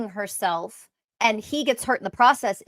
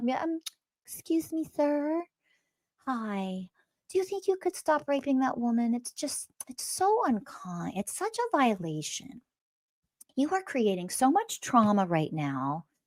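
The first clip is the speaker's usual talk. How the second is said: put-on gentle soft voice, higher and quieter; 3 semitones higher, 8 dB quieter than usual. Mocking a gentle plea to a man attacking a woman: mocking soft gentle tone. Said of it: "you're gonna use a soft tone".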